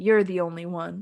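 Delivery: mock flat, emotionless deadpan delivery. Retelling an actress's line from a movie scene: imitating flat emotionless delivery. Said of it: "but with no emotion".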